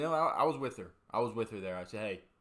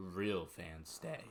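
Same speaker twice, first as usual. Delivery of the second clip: put-on earnest sincerity, lower pitch; 3 semitones lower, 6 dB quieter than usual. Retelling what a woman down the bench said, imitating full sincerity. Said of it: "Fully full sincerity".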